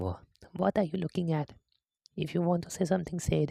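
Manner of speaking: very high, squeaky, sour retort snapped out. Reading the game's dialogue aloud, speaker does the Natsuki voice. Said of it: "why I'm doing the voice lines".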